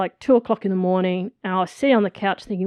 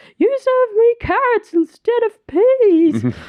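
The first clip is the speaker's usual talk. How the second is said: very high, loud, weepy, tearful sobbing wail; 5 dB louder than usual. Retelling a bride's complaint at her wedding dinner: imitating a crying bride. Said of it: "And she's crying".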